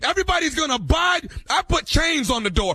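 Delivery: stern, high-pitched, loud yelling.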